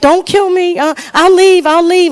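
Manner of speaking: high, loud, terrified begging voice. Retelling a video clip of a woman being attacked: imitating a frightened woman. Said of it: "The lady is just frightened, like".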